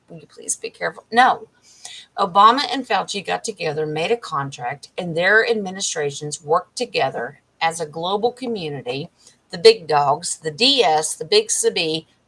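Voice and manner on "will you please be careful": soft, breathy, very quiet whisper, barely voiced. Retelling a warning someone gave, imitating a whisper. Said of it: "He's whispering".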